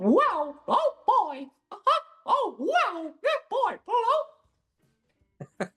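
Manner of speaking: high, bouncy, squeaked-out voice. Asked to do a bit for the hosts, the speaker does a Mickey Mouse voice. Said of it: "a Mickey Mouse impersonation, like the voice".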